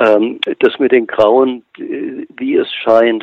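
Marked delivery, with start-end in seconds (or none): 2.4-3.2 slow, weighted stress on scheint. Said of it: "und ich betone scheint".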